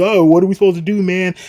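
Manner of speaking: high, loud scream full of panic.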